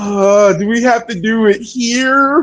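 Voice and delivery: mock very slow, disgusted, reluctant drawl. Voicing what Paul seems to think as he looks on: imitating a disgusted Paul. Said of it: "Paul looks so disgusted. He's like".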